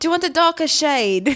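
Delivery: Australian and Irish accents blended together. Voicing a talking robot AI in a bit, with a put-on Australian-Irish accent. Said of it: "It's like Australian".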